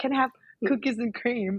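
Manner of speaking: put-on American accent. Retelling ordering ice cream now: put-on American accent. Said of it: "I think I started to do that".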